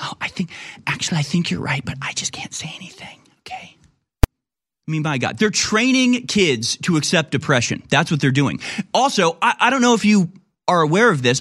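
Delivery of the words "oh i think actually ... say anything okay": hushed, secretive whisper under the breath. Retelling an admission made to a thirteen-year-old: imitating someone whispering. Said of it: "whispering to him".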